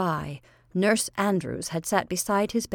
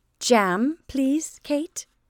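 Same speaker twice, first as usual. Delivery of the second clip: kind, gentle, kindly tone, pitched up; 5 semitones higher than usual. A woman speaks to a servant at the table, kindly. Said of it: "said Josephine kindly".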